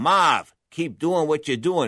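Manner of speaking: put-on Massachusetts-accented voice. Recounting what a boxer's corner kept telling him between rounds, in a Massachusetts accent. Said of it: "in that Massachusetts accent".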